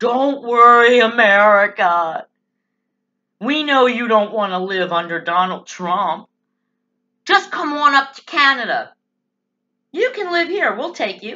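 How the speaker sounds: snarky, sneering, put-on reassuring tone. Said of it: "got all snarky and said".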